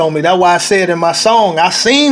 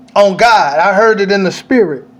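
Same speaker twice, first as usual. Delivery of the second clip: usual speaking voice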